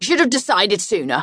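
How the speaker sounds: smug, self-satisfied, told-you-so tone. To the companion struggling with the map in the car, smug. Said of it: "I don't know why you sound so smug".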